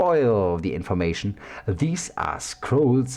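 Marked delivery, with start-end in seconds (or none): none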